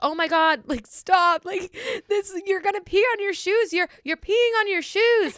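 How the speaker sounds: put-on giggling, drunken-sounding yell, pitched very high. Recounting being drunk and yelling at someone about to pee on his shoes, retelling a drunken laughing yell. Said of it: "so I'm like laughing, like yelling".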